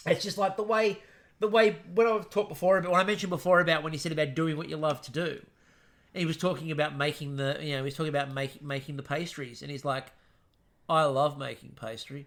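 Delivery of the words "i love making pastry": flat, low, slow deadpan delivery. Retelling how Neil talked about making pastries: imitating Neil deadpan. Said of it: "And it was so deadpan".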